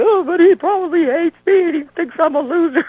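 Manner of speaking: put-on very high, loud, weepy crying wail. Retelling a phone call where he was talked down, imitating own past crying. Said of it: "and I'm all crying".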